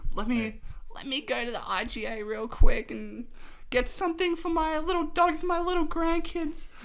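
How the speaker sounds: put-on very high old-person voice. Doing an impression of an old person from a hill suburb: imitating an old person. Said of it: "I was trying to do like that".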